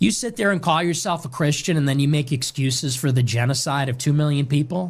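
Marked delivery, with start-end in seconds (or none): none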